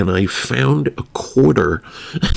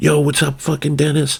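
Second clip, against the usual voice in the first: high put-on New York wannabe-gangster accent; 5 semitones higher than usual. Retelling how a man who calls himself the Italian talks, in a New York-ish wannabe gangster accent. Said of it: "New York-ish wannabe gangster accent".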